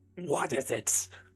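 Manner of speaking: high, menacing, evil villain voice. In a tabletop game, the narrator voices a figure who looks up, in a very evil voice. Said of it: "he has this very evil voice and he's like".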